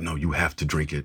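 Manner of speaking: put-on whispering. Retelling a film scene where a woman urges a man to drink; retelling a whisper. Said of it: "she's like whispering".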